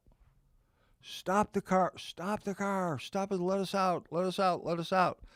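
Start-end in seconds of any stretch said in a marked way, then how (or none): 1.0-5.1 high-pitched, panicked, pleading scream. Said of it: "screaming, freaking out".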